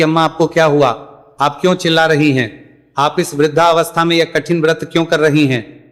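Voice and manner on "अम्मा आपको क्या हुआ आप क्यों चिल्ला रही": plain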